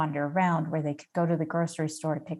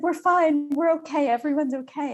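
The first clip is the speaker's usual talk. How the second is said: high-pitched sobbing voice, reassuring in tone. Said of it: "doing that kind of sobbing".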